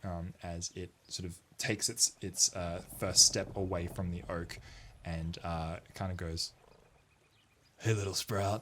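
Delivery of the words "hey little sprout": talking tree creature voice. Voicing a treant greeting a player character: voicing a treant. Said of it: "a tree ant".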